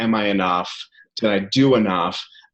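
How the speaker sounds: normal talking voice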